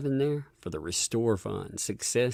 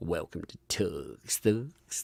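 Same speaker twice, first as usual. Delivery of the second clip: put-on big, deep announcer voice; 4 semitones lower than usual. Welcoming a new member after thanking them, in an announcer voice. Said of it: "I get to get out my announcer voice".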